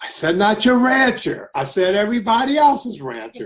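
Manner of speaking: yelling. Correcting the other speaker, who then tells them to stop, yelling. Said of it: "Stop yelling".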